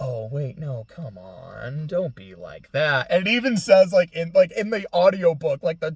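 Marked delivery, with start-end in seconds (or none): 0.0-3.1 mock, sudden, honeyed, slow, drawn-out pleading. Retelling a character suddenly changing his tone: imitating a sudden sweet tone. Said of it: "he immediately changes his tone".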